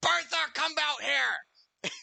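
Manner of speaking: very high call, yelled loudly. Voicing an innkeeper calling for bertha: yelling across a bar. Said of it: "yelling over the top of the bar now".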